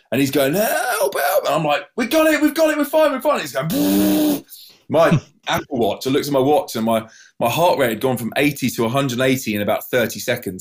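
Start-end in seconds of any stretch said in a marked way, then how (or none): 0.5-1.4 put-on tearful crying, pleading, much higher pitch. Speaker retells their guitarist's plea after the collision, imitating him crying for help. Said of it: "with his hand out in tears".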